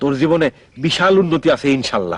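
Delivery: ordinary delivery, nothing marked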